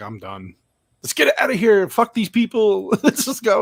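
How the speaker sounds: high, swooping, fed-up, pissed-off rant. Retelling a movie scene where the character gets angry: imitating Ripley pissed off. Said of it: "Ripley's getting pissed here".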